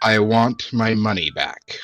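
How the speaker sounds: very stern, firm voice without shouting. Speaking in character as Dust to a woman, very stern, not shouting. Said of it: "but very stern".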